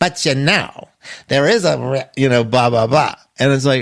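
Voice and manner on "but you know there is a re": needling, nagging voice. Acting out the nagging voice in the speaker's head: imitating an inner nag. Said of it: "that's the sound of the voice in my head".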